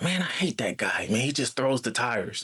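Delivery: conspiratorial, confiding stage whisper. Retelling what another tire delivery guy said to him: imitating a half-whisper. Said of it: "he whispered to me".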